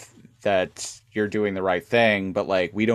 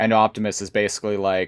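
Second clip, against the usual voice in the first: ordinary talk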